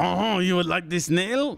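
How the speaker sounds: clumsy fake French accent, rattled off quickly. After worrying about offending French listeners, the speaker tries it anyway: bad French accent. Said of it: "my French accent".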